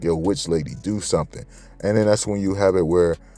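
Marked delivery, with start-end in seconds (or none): none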